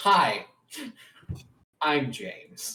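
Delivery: put-on synthetic voice like old PC speech software. Showing how the character James sounds now: James's new voice. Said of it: "he sounds like this now".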